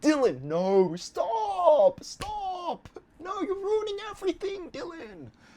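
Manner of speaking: put-on very high, drawn-out scream, "stop" stretched long. Retelling how viewers reacted to a scene: imitating group screaming. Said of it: "we were all screaming, like".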